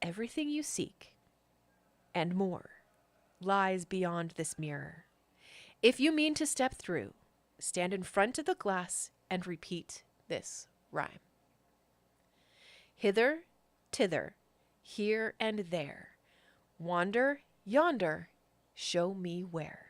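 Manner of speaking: softly spoken, hushed, incantation-like tone. Game narrator voicing Mister Witch addressing the players, in a hushed tone. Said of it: "addresses you in a hushed a hushed tone".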